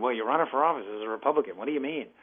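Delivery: fast, badly done, put-on childlike voice. Running as a Republican, voicing an imagined listener's objection: bad childlike voice imitation. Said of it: "my bad childhood voice imitation".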